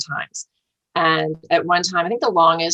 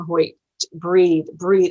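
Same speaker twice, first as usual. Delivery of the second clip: normal talking voice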